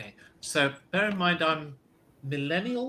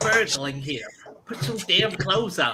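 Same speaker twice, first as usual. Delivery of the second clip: put-on New York Brooklyn accent; 3 semitones higher than usual. Playing a tabletop game, a player speaks a character's line in a Brooklyn accent. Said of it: "in a Brooklyn accent".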